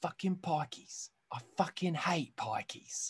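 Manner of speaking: whispered, hard-breathed tough-guy voice under the breath. Trading impressions with the others, told to go: Jason Statham impression. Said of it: "I'm going to do Jason Statham from".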